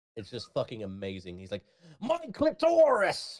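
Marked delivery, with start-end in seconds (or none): 2.1-3.4 shrill, loud, blurted-out outburst. Retelling a comedian's audiobook reading, in Gilbert Gottfried's voice. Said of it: "in his perfect accent".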